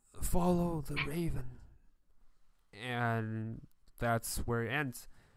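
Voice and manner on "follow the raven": voice dying away at the end. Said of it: "sound is actually fading".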